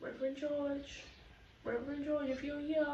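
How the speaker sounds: barely audible, very quiet, faint calling voice. Retelling hearing someone behind calling a ghost: imitating a faint voice. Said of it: "this faint voice behind me going".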